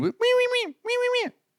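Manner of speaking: very high, soft, whistling wees. Recalling a clown who never talked and scared him: imitating Willie Whistle's voice. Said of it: "That that was his voice".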